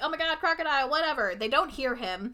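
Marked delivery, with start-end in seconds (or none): 0.0-0.9 high-pitched, light, mildly alarmed call. Retelling a plot where a character warns others of a crocodile: imitating someone screaming. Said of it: "screaming to them, like".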